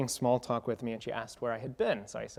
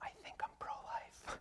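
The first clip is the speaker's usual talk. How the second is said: put-on near whisper, higher and quieter; 16 dB quieter than usual. Retelling a classmate's confession in the hallway: imitating an almost-whisper. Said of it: "and almost whispered".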